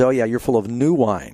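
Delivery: plain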